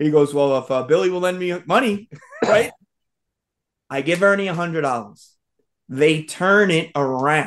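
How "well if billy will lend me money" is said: talking through laughter. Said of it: "he's laughingly laughing".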